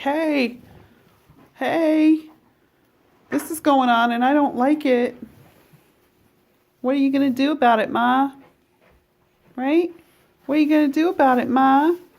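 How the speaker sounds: very high, complaining goat holler. Retelling how a goat complains when she dislikes something: imitating a goat yelling. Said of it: "she'll just yell like".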